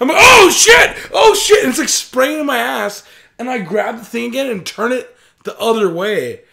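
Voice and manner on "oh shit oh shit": drawn-out scream, very loud and very high. Speaker retells the thing spraying on them, reenacting their screaming. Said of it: "I'm screaming".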